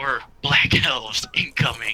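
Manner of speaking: carrying stage whisper. Player's character relays a warning to a companion over there, in a loud whisper. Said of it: "I'm uh say in the loud whisper".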